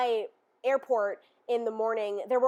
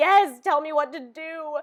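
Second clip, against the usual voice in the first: tearful sobbing voice, pitched higher; 3 semitones higher, 4 dB louder than usual. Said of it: "sobbing on the phone with my friend".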